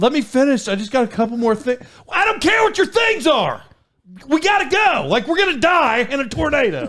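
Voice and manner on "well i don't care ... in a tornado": urgent, high-pitched voice. Retelling telling her to hurry to the cellar during tornado sirens: retelling urgent orders. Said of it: "I did start talking like that".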